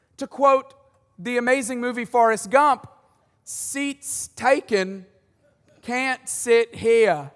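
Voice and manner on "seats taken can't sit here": put-on loose, slow, rough Australian accent, very drawn out. Quoting a line from the movie Forrest Gump, kind of Australian accent. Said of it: "which was kind of an Australian accent there".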